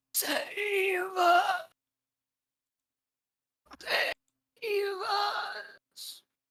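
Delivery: hoarse rasp, very high, very slow. Narrator voicing a figure stumbling toward the listeners, in a very raspy voice. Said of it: "you hear in a very raspy voice".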